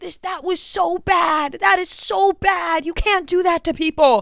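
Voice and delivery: put-on very high, shrill scolding yell. Recounting stepping out of the elevator and hearing people behind; retelling people yelling. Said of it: "I just hear them yelling".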